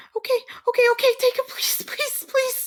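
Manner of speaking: frantic, panicked freak-out, very high-pitched. Voicing a character in a game scene as the players act: acting panicked. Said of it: "her panicking and, and, and just, uh, just freaking out".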